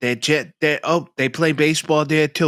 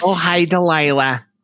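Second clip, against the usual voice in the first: put-on fake Chicago accent. Imitating a woman calling a radio host, in a put-on Chicago accent. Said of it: "ladies with Chicago accents are calling".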